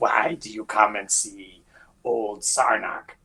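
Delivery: hissing creature voice, words hissed out. Game master voices Sarnak waddling over toward the players, hissing Sarnak voice. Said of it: "he kind of hisses towards you and he's like".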